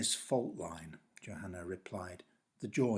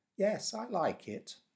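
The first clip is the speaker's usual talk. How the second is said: very high, squeaky, easygoing hamster voice; 12 semitones higher than usual. Reading a story aloud, the narrator voices the hamster in a relaxed, squeaky voice. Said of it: "confirmed the hamster in a relaxed and rather squeaky voice".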